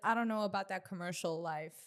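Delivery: ordinary delivery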